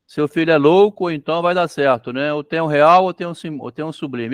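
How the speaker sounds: normal talking voice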